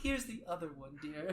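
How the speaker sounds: on the verge of tears. Voicing a character handing over the other earring: welling up with tears. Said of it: "kind of starts welling up a little with tears".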